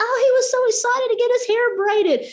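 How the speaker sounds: mock, high, called-out yell. Retelling a parent's reply across a supermarket: imitating a parent yelling back. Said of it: "we're literally just yelling this across the supermarket".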